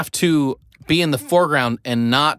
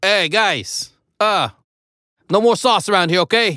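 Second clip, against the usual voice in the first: put-on New York accent, much higher; 6 semitones higher than usual. Playing a security guard telling the guys to leave, New York accent. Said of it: "he's from New York this time".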